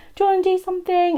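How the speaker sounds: sweet, high, fast pleading tone.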